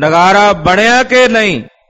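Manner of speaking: put-on loud commanding voice. Retelling the tenth Guru on his throne asking a question, in a thundering loud voice. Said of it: "ਗਰਜਵੀਂ ਆਵਾਜ਼ ਵਿਚ, ਉੱਚੇ ਬੋਲਾਂ ਵਿਚ ਬੋਲੇ".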